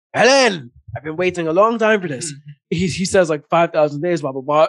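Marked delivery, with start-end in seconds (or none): 0.1-2.3 put-on heavy, thick Irish accent, laid on thick. Retelling a story, the speaker voices a man calling out to a woman, in a thick Irish accent. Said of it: "We hear that thick Irish accent".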